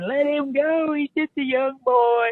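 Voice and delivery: mock very high, shrieking old-woman scream. Retelling the grandmothers at ringside, imitating them screaming. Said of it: "they're already screaming".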